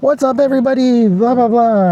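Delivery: very high, crazy animated, totally different voice. Describing a man he ran into while he was filming: imitating a crazy animated voice. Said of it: "he had this crazy voice, like".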